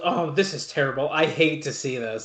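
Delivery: put-on, completely sarcastic, insincere pity. Retelling a commentator's line while watching wrestling: imitating a sarcastic remark. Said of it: "Completely sarcastic".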